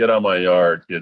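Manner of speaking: normal talking voice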